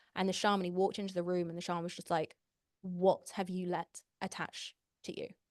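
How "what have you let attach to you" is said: usual speaking voice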